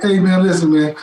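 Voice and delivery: ordinary talk, nothing marked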